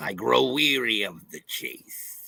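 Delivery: slow, hissing, bad creature voice, drawn out. Greeting a viewer in the chat with a bad Gorn impression. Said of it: "it's a bad Gorn impression".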